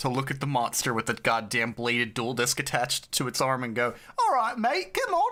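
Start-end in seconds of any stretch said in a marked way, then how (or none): 4.2-5.3 put-on British accent, pitched high. Picturing how a Brit would react to a monster, in a mock British accent. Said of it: "leave it to a fucking Brit".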